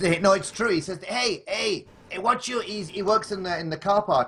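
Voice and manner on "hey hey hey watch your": put-on Greek accent, higher pitch. Retelling what a painter in the car park shouted: Greek accent imitation. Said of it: "that was my Greek".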